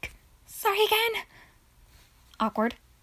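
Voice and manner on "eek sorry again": very high, shrill, overjoyed ecstatic burst. Auditioning a character's line for the prompt ecstatic: ecstatic.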